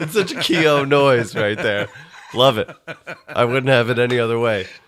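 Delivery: words spoken through laughter.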